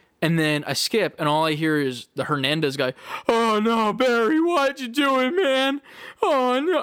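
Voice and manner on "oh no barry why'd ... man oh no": play-acted, very high, slow, drawn-out sobbing wail. Retelling what a game character says while crying: imitating someone crying. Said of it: "he's crying on the ground".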